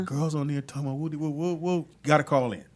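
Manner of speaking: normal talking voice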